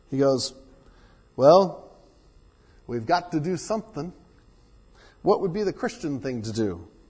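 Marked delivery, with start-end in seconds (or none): 1.3-6.8 attempted southern drawl, poorly done. Telling a joke, quoting a fisherman: attempted southern drawl. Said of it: "I wish I could do a good southern drawl".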